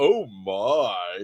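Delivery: my dropped low and stretched out, camp. Retelling a radio interview reply: George Takei "oh my" impression.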